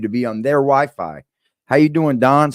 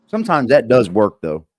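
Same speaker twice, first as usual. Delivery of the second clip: ordinary delivery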